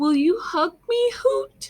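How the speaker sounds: forlorn pleading voice. Reading a story aloud, voicing a character's line: sad voice. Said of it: "Get your best sad voices out".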